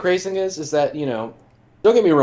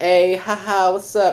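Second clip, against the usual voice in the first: put-on drunk voice, higher; 5 semitones higher than usual. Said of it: "he did the drunk Matt".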